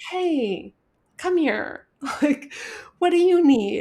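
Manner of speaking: kind, gentle tone. Contrasting with screaming at a frightened kid, speaker acts out a kind tone. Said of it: "with love, with kindness".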